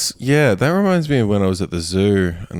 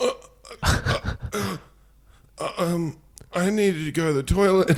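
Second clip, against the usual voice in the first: very high-pitched, hesitant, halting stammer; 10 semitones higher, 6 dB quieter than usual. Retelling own reply to a teacher: imitating own past hesitant stammering. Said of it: "I'd just be sitting there going".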